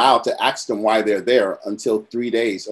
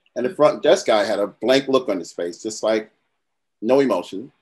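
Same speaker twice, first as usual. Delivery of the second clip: ordinary delivery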